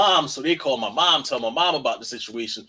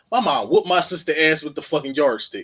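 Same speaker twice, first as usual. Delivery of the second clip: ordinary delivery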